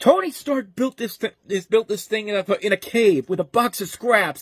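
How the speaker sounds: mock full-volume screaming. Quoting a favorite movie line, the speaker is retelling a scream. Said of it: "screaming at the top of his lungs".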